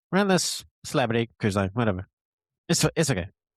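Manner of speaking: passive-aggressive brush-off. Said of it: "said it in a passive-aggressive way".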